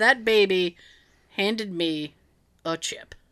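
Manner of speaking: slow, put-on puzzled voice. Retelling what he said after being handed a chip, in a James Spader voice. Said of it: "said in a James Spader voice".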